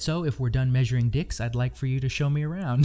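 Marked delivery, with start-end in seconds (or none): none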